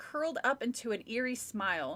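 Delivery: ordinary delivery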